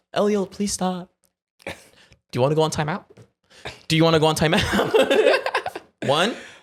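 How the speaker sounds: too-nice, overly sweet dad voice. A parent demonstrating their English voice with their kid; overly nice parent voice. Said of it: "my English voice is just too nice".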